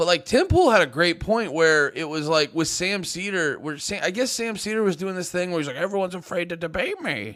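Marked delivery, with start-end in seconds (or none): 5.8-7.4 swooping sing-song cartoon voice, pitch swinging all over. Imitating a commentator boasting that everyone fears debating him: Sam Seder Bob's Burgers voice. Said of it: "with his dumb fucking Bob's Burgers voice".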